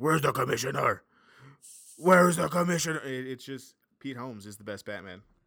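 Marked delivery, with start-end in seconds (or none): 0.0-3.0 loud, insistent, demanding superhero yell. Explain why you can't take the Batman voice seriously, imitating Pete Holmes yelling as Batman. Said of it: "him yelling at Superman, or yelling at the commission".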